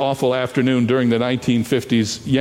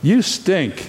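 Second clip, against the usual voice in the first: put-on small, high-pitched childlike voice; 6 semitones higher than usual. Retelling a boy's reply to them, in his little kid's voice. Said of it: "in his little kid's voice".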